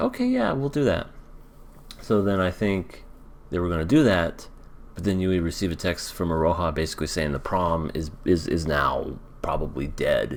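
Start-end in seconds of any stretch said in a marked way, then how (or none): 0.0-1.1 much higher pitched put-on voice. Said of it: "Hachiman's like".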